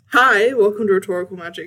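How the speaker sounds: loud, overly hyped podcast host delivery. Recording an intro during a sound check, loud. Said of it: "That was really loud at the start".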